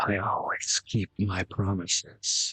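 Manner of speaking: very slow, deliberate, drawn-out whisper. A player's character leaning in close to a fallen dwarf, whispering. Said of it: "just gonna whisper".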